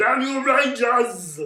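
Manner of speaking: very high, very loud, blaring shout. Imagining how the actor would voice the character: Arnold Schwarzenegger as Goldar. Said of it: "Arnold Schwarzenegger doing the voice as Goldar".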